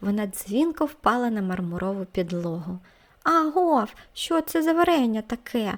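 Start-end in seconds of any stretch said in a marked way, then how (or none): 3.2-5.8 yelled out, high and loud. Andriyko, after dropping his spoon of jam on the floor, shouting. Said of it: "закричав він".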